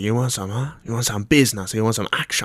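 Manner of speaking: put-on a bit of Chinese accent. Retelling a stranger offering drugs: imitating the dealer's put-on Chinese accent. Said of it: "he went a bit Chinese there".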